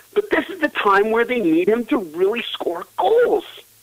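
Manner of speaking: fed-up, exasperated voice. Discussing New Jersey's scoring needs with Kovalchuk, sounding exasperated. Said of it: "I just sound like exacerbated there".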